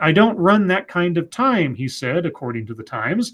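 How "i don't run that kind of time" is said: usual speaking voice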